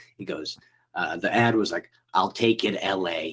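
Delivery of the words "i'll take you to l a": put-on Rhode Island accent. Recalling the Craigslist ad from a first manager, speaker does an old Rhode Island guy voice. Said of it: "I'm doing his voice now".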